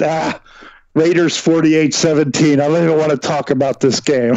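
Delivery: mocking, scornful, sarcastic, dismissive throwaway tone. Retelling own sarcastic pick from last week's show: imitating own sarcastic remark. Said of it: "I sarcastically said".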